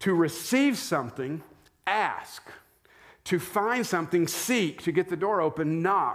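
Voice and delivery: ask, seek, knock stressed with high pitch.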